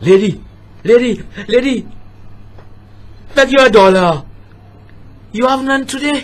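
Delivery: crazed, unhinged madman voice. Acting out a madman begging a lady for a dollar: voice of a madman. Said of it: "This is the voice of a madman".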